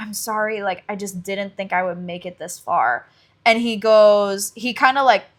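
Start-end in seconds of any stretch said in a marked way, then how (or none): 0.0-3.1 put-on apologetic voice, lower and quieter. Retelling a book character's apology, imitating an apologetic character. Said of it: "she's definitely apologetic".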